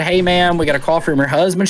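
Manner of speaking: ordinary talk, nothing marked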